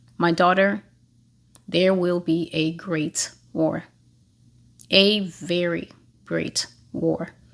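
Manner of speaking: play-acted, deeply grave, weighty tone. Recounting a voice heard while doing dishes, retelling a very grave tone. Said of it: "in a very grave tone".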